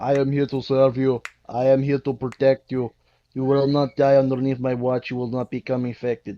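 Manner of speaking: put-on, zombie-like robot voice. Imitating how Terminator robots talk: imitating a zombie-like robot. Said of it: "they practically talk like a zombie".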